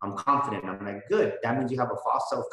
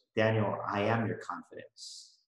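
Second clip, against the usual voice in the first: soft, hushed, half-whispered confiding stage whisper; 2 semitones lower, 4 dB quieter than usual. Retelling the words God half-whispered during a hard time: imitating a half-whisper. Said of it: "he whispered to me".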